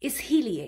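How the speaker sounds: stress on the hi syllable in isliye. Repeating a word to point out its emphasis: stress on hi in isliye. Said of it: "There's like a emphasis on he".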